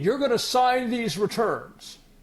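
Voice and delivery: mock swaggering, puffed-up, chest-out delivery. Retelling an agent pushing the speaker to sign: imitating a chesty tone. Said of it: "he started getting chesty again".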